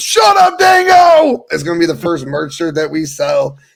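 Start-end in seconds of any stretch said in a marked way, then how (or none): 0.0-1.4 high, loud, teasing yell. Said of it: "I always yell".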